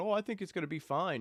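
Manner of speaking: put-on, knowingly ironic, falsely sure sarcasm. Describing a video, acting out what the people in it sarcastically say: mock-sarcastic retelling. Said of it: "they're being sarcastic".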